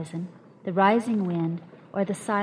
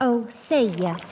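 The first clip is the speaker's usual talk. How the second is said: loud cried-out exclamation; 3 semitones higher, 5 dB louder than usual. Dunn cries out while leaping into his own skiff. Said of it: "cried Dunn".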